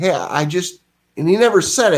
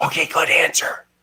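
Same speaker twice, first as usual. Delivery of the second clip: put-on loud whisper. Retelling the friend's wife answering again: imitating a loud whisper. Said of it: "she again whispered again, like in a fucking helicopter".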